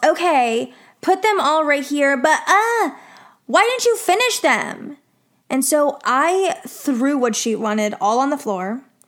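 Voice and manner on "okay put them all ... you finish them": mock high-pitched yelling. Recounting coming back with an unfinished task, imitating her yelling. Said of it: "she yells".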